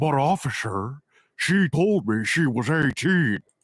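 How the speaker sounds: slow, deliberate, measured, drawn-out put-on voice. Speaker acts out a joke bit about a cartoon villain, in Cell voice. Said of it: "I just like doing that voice".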